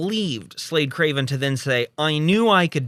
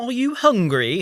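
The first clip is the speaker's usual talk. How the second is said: put-on British accent, pitched up; 7 semitones higher than usual. Recapping a scene where Kate speaks to the hacker, in Kate's British accent. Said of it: "in a British accent".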